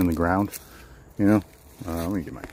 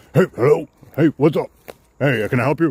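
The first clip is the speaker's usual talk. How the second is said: gruff, rough voice; 8 semitones higher, 8 dB louder than usual. Speaker retells a man under a tarp answering them, in a gruff voice. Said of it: "there's just like this gruffy response".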